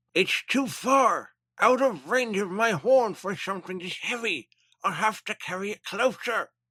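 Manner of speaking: put-on Irish accent. Voicing a character in a fan reading of a story: Irish accent. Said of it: "doing that in an Irish accent still".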